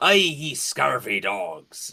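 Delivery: slow, drawn-out, drawling pirate voice. Describing how Lan talks to the crew, Lan's piratey voice. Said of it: "like thing to sound more piratey".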